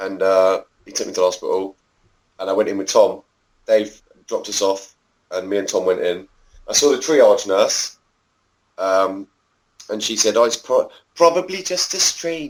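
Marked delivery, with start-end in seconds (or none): 10.4-12.5 put-on Welsh accent, pitched up. Recounting a hospital visit, quoting the triage nurse in a put-on Welsh accent. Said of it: "That's that's my Welsh accent".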